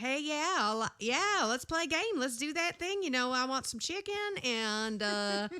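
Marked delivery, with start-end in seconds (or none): 0.0-4.1 put-on deep Southern US accent, pitched higher. Retelling own talk after accent comes back in the South: Southern accent. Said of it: "halfway through the conversation, I'm like".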